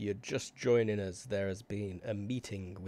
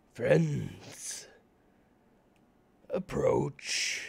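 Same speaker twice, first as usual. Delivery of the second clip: bellowing, booming, rough giant's voice; 5 semitones higher, 5 dB louder than usual. A giant answers a shouted greeting in its own language, in a booming giant voice. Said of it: "Giant's voice bellows back".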